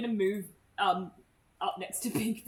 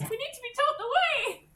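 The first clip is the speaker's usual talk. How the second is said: put-on high, loud child voice, pitched way up; 5 dB louder than usual. Mordred slips into his actual child voice to answer: Mordred's child voice. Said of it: "slips into his actual child voice".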